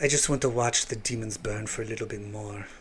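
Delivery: clumsy put-on Russian accent, very low and hushed. Playing a character in a game and attempting an accent: bad Russian accent. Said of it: "supposed to be a Russian accent".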